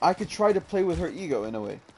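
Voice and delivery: ordinary talk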